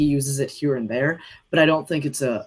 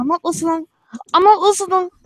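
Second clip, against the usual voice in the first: put-on creature voice, higher and louder; 6 dB louder than usual. Taking a turn doing Gollum impressions: Gollum voice. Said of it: "That was good".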